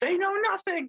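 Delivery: put-on very high, freaked-out screaming. Describing a 2008 clip, imitating Jim Cramer screaming. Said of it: "screaming, he's like".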